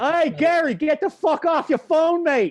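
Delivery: terrible put-on Boston accent, very high and loud. Speaker from Boston acts out how family members talk to each other, bad Boston accent. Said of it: "that was the worst Boston accent ever".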